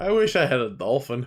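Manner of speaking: spoken in a sarcastic tone. Retelling a wish made during a game, imitating own sarcastic remark. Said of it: "And I sarcastically just lis-".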